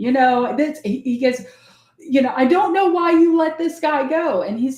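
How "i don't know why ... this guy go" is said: mock heated, high, angry yelling. Retelling how a new hire started yelling at his boss: imitating someone yelling. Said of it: "like, yelling".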